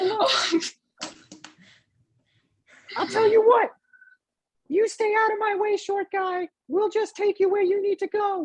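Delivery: very high, squeaky cartoon voice. A first mate addresses a short guy, in a Mickey Mouse-like voice. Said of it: "Both of you sound like Mickey Mouse".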